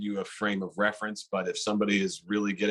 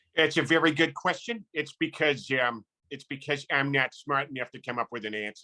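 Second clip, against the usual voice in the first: cartoon dad voice, pitched up; 5 semitones higher than usual. Answering a silly question in a different voice, Peter Griffin voice. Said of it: "Peter Griffin".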